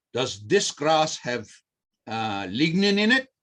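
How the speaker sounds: slow, partly done put-on Czech accent. Retelling a lecturer's question in the Czech Republic: imitating a Czech accent. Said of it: "see if I can do it with some of the accent".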